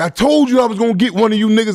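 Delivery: put-on high holler. Retelling what the attacker yelled after the stabbing: imitating someone hollering. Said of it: "he all hollering like".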